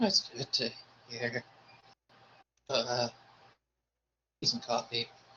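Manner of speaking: on the verge of tears. A character greets two people at the gate in the morning, on the verge of tears. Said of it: "you kind of sound like you're about to cry".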